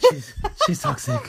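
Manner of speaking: overwrought, big, dramatic delivery. Quoting a player pulling another aside: imitating Iker's dramatic voice. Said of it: "The drama in Iker's voice".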